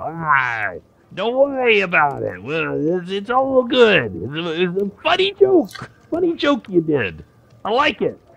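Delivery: very high, squeaky, swooping, broken Common. The kobolds answer after someone dropped coin to them and apologized, kobold speaking horrible Common. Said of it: "in a very horrible common".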